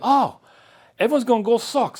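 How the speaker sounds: put-on high-pitched, hard German accent. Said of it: "like a hard accent".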